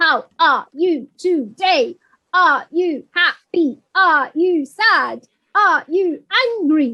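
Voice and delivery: slow, mechanical, robotic machine-like delivery. Suggesting ways to ask a group how they feel, demonstrating in a robot voice. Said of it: "You could do it like a robot".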